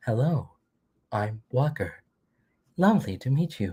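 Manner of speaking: slow, deliberate helper-robot voice. Retelling a role-play robot character's greeting: Baymax-like robot voice. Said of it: "He had a voice of going like".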